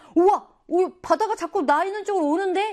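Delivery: high, loud mock amazement with a gasp.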